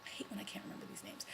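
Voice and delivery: fast, hushed whispered aside.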